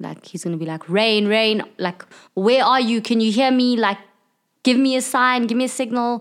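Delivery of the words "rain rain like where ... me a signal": furious, angry, high-pitched screaming shouts. Playing an angry character screaming for a lost friend on deck: screaming in anger. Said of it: "he's gonna start screaming for Rain".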